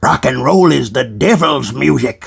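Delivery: very low, mocking, fogeyish old-timer voice. Telling an older generation how they sound: imitating an old person. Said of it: "this is what you sound like".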